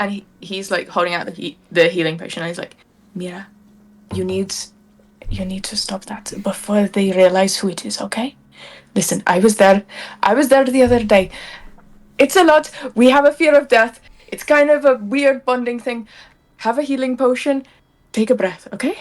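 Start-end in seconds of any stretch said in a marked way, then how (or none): 3.1-19.0 put-on very hushed quiet voice, higher pitched, no accent. Voicing a character crouched beside a frightened ally: very hushed tones. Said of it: "very hushed tones, drop the accent".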